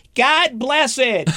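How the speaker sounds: loud, very high, exasperated, frustrated cry. Parent quoting their frustrated kid, retelling a loud exclamation. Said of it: "I hear him very loudly".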